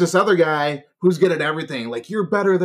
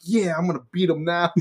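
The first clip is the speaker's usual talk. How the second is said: put-on, acted-out nervous voice. Retelling what a guy at the arcade said before a game, acting out nervousness. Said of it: "he's all nervous".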